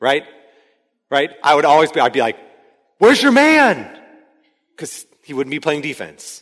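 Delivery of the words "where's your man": yelling, pitched higher. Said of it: "I would just yell constantly at this boy".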